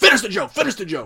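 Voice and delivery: shrill, loud, furious mobster-style shout. Retelling a story, quoting the Mafia Don's demand: imitating a mad Mafia Don. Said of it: "the Mafia Don's all mad".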